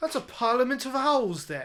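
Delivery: very shrill, loud, high, awful fake British accent. Talking about owls, the speaker quotes some guy in an awful British accent. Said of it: "That was an awful British accent".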